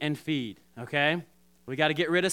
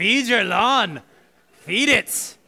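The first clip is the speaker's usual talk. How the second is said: loud, high, best-effort put-on Scottish accent; 5 semitones higher, 8 dB louder than usual. Speaker leading an audience exercise says the line in a Scottish accent. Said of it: "your best Scottish accent".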